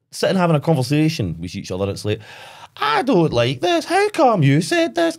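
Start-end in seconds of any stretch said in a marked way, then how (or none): 2.8-5.2 very high, swooping, unnatural fake Scottish accent. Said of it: "the accent".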